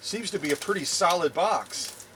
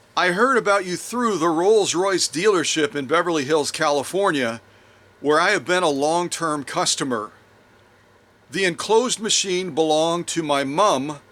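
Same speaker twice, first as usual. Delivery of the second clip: ordinary talk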